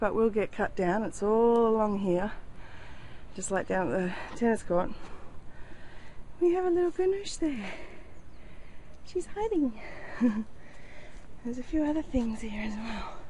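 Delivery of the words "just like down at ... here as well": soft, puffed, winded, short of breath. Showing the garden right after carrying a kayak up from the ocean: out of breath. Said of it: "Sorry, I'm puffed".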